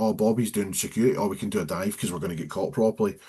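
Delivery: normal talking voice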